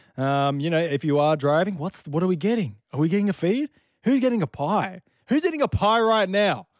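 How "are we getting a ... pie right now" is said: excited yelling with high pitch. Speaker back with listeners, quizzing them about their morning, yelling. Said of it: "I don't know why I'm yelling".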